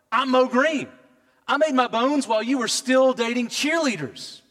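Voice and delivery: annoyed screaming. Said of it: "he screams at him".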